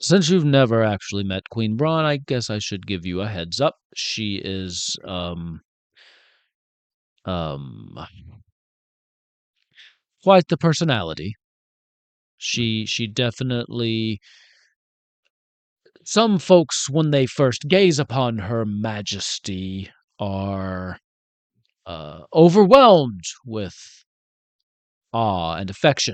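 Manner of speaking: voice brought down a little, dropped low. A character gives a newcomer a heads-up about the queen, in a lowered voice. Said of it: "lowers his voice a little bit".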